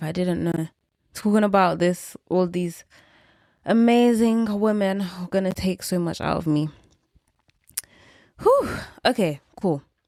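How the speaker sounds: out of breath, breathless. Thanking women who inspired her, a little out of breath. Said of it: "I'm a little bit out of breath".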